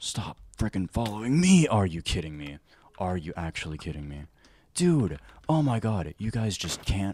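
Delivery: furious, very loud, angry yelling. Fed up with something that keeps following you, really loud shouting. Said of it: "Sorry, I got really loud".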